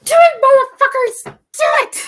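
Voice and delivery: very high, very loud, shrill cheering scream. Imagining the event televised, acting out everyone mock-screaming at the screen. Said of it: "We will all be screaming to the screen".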